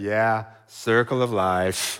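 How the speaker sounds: play-acted weary drone, very low and slow. Retelling a teacher's reply to a kid whose hamster died, imitating a weary teacher. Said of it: "in this weary tone".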